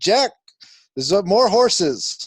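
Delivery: high, slow, drawn-out yelled call.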